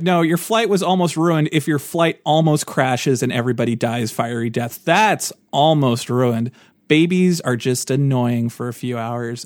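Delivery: plain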